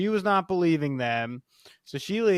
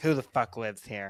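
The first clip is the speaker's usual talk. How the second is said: put-on confrontational, combative woman's voice; 3 semitones lower than usual. Retelling how a woman knocked on the door: mimicking a confrontational woman. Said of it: "she's like very confrontational".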